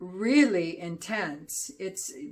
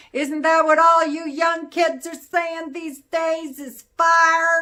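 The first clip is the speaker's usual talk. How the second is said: very high, very loud, booming Southern accent, fire stretched; 10 semitones higher, 11 dB louder than usual. Describing a flavor, the speaker slips into an old Southern voice. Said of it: "That was my old Southern voice".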